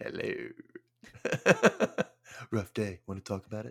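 soft, breathy, seductive, sultry whispered hush. Joking about holding out a snifter to someone, sultry voice. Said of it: "Sultry and".

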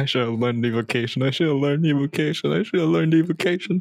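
quiet murmuring, muttering to oneself. Voicing a mage who fails to heal unconscious people: murmuring to himself. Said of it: "you just hear him murmur to himself".

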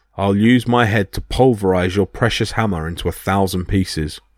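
ordinary delivery

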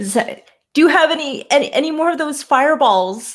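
yelling out. In a tabletop game, a character calls out to her ally Sammy, shouting. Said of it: "And she shouts".

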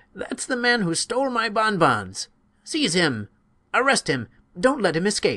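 very high, loud, shrill, swooping accusing cry. Narrator reads a woman accusing the senator in the hall, loud accusing cry. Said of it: "she cried in a loud voice".

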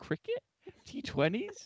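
bewildered, baffled, puzzled tone. Retelling a co-host's reaction to recapped games: imitating Glenn squinting, baffled. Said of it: "Glenn was like when you give, like, one of your parents, like, an iPad or a phone, and they have to squint".

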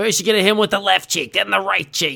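loud hollering like a ringside coach. Imitating the boss, who sounds like Rocky's coach, Mick from Rocky voice. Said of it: "that makes my throat really itchy doing that voice".

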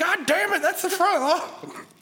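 shrill, very high, freaked-out yell. Retelling how the listener's mom reacted to the lawn, imitating her freaking out. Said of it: "freaked the fuck out".

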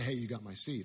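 ordinary delivery

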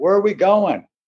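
acted, high, half-screamed shout. Recounting a speeding ride on the water, yelling at his companion; retelling screaming at someone. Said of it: "I'm kind of screaming at him like".

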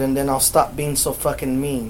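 ordinary delivery

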